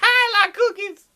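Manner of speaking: very high-pitched, simple-sounding voice. Joking about which brother will inherit the throne: Matthew impression. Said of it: "Matthew's like".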